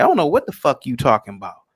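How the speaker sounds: plain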